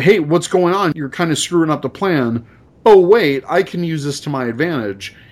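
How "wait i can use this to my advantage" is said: ordinary talk, nothing marked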